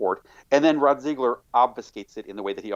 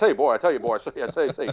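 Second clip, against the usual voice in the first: put-on big old Southern politician voice with a stutter; 3 semitones higher than usual. Imitating a senator who sounded like Foghorn Leghorn: Foghorn Leghorn voice. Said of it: "literally sounded like Foghorn Leghorn".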